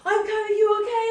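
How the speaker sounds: man's very loud, high-pitched shout. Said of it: "this guy is shouting at me".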